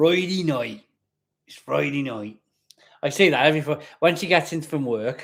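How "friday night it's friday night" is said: Wiltshire accent, best attempt. Repeating the line to show it: best Wiltshire accent. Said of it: "in my best Wiltshire accent".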